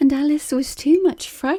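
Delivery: ordinary delivery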